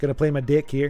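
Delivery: put-on New Zealand accent. Announcing a move while playing a game, new zealand accent. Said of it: "let me say this like a New Zealander".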